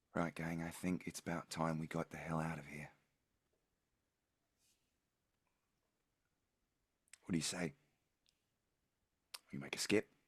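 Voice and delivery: soft, quiet, gentle coaxing murmur. Roleplaying a character leaning in to address the group, in a soft, quiet voice. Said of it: "quietly, in a soft voice".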